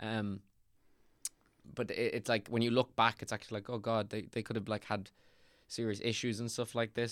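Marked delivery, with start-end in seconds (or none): none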